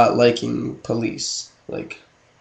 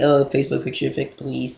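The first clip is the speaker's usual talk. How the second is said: mocking fifteen-year-old girl voice; 7 dB quieter than usual. Complaining about teens who say the phrase, mocking imitation of teenage girls.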